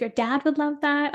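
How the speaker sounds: ordinary delivery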